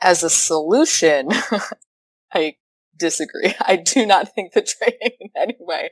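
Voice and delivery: slow speech, words broken up by laughter. Answering a question about training as a solution, laughing while talking. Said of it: "I'm sorry for laughing".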